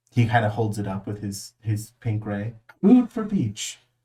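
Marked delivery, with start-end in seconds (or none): 2.8-3.8 very high, loud, put-on French accent. Describing him holding it up with his pink ray: French accent. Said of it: "It's in a French accent".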